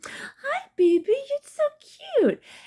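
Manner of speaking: put-on very high, squeaky, swooping baby talk voice. Explaining how people talk to babies, demonstrating high squeaky baby talk. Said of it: "in like these high squeaky tones".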